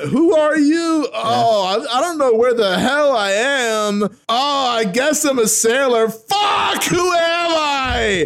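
very high, very loud panicked yelling. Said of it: "wow, that was really loud".

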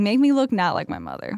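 plain

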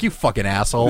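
mock sneering contempt. Retelling a man sneering at him over an ice cream cone: imitating a sneer. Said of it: "he's just sneering at me like".

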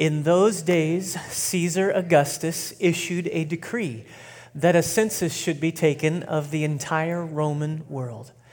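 very slow, deliberate, intentional reading aloud. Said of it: "We're gonna read it real slow and real intentionally".

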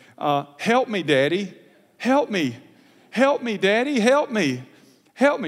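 slow, tearful, begging tone through crying. Retelling his daughter crying out as the doctor brings a needle, imitating a crying plea. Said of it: "And she begins to cry".

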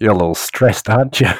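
confiding stage whisper, spoken close to the ear. Playing a character who creeps up to a bus driver: half-whispering in his ear. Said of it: "whisper in his ear".

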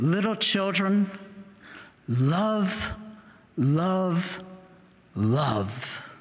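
mock tearful, slow words, word "love" drawn out. Retelling what an old apostle would say: imitating tearful speech. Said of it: "he would say it with tears".

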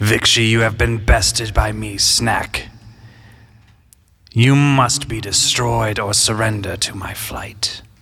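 reaching for a big, grand, puffed-up declaiming voice. Voicing Snack as it declares Vixie bested, in Snack's booming voice. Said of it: "trying to boom my voice again".

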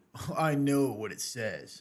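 slow, smug, arrogant know-it-all voice, very self-assured.

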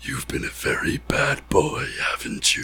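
demon voice in a hushed whisper. Retelling leaning over to whisper into unaware people's ears, in a demonic whisper. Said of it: "in a demon like a demonic voice".

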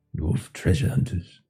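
quiet muttering in character voice. Voicing Gandalf as he watches someone fiddle with trinkets: Gandalf muttering under his breath. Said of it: "you hear him under his breath".

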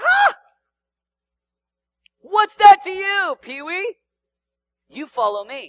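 put-on casual sarcastic tone, swooping and drawn-out. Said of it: "in our vernacular, he looks at him and he's like".

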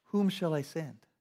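put-on compassionate, empathetic voice near desperation. Reading the Lord's call from Isaiah 6:8, empathetic, almost desperate. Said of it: "I heard this empathetic voice".

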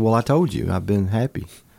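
plain

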